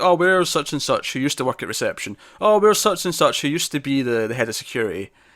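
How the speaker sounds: usual speaking voice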